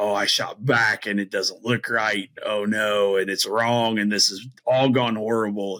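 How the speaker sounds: usual speaking voice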